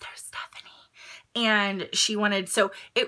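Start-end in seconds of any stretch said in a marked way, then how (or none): 0.0-0.7 hushed, very quiet, barely voiced whisper. Retelling what the other person said she whispered: imitating someone whispering. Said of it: "She said that she whispered".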